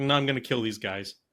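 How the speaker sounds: ordinary talk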